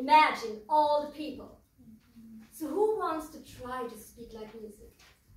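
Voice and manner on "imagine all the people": very loud, intense and fiery delivery. Showing an audience how to speak lyrics in different colour voices: fiery red voice. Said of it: "Or very fiery red voice".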